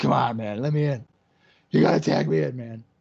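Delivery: angry, pissed-off, griping voice. Calling a tag-team match, imitating the wrestler who wants in: imitating pissed-off Harrison. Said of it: "Harrison's pissed".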